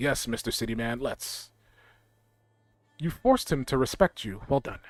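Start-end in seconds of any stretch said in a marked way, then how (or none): 0.0-1.5 grudging and unhappy, lower and quieter. Voicing a beaten leader agreeing to talk: unhappy. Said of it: "He does not look too happy".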